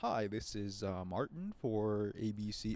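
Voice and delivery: put-on, slow, stagey TV news anchor voice. Mocking how people on the news talk: imitating a news anchor. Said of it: "who talks like that".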